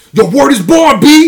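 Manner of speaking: put-on hard, aggressive New York accent, very high and loud. Mocking how people from New York City talk: aggressive New York accent. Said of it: "they all fucking have that aggressive ass".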